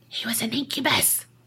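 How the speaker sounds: soft, spooky whisper.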